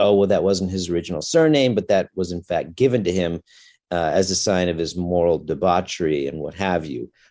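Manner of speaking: plain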